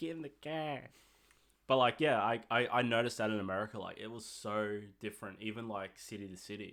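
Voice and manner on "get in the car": attempted, pitched-up Boston accent. Chatting about American accents, trying out a Boston accent. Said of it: "is that how they say it?".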